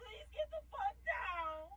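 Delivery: high, crying, panicked yelling.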